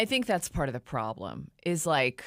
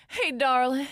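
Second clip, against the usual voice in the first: much higher Southern drawl, y'all-style accent; 6 semitones higher, 3 dB louder than usual. Talking about falling into y'allin' after three days: southern drawl. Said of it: "get to y'allin'".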